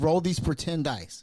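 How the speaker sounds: ordinary talk, nothing marked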